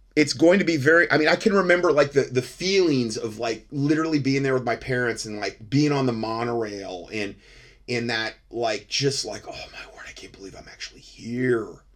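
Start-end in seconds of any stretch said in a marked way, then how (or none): 9.5-11.7 play-acted breathy, hushed whisper of childlike wonder. Retelling being on the monorail as a child: imitating own childhood awe. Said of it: "it was like Christmas morning".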